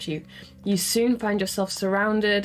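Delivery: ordinary delivery, nothing marked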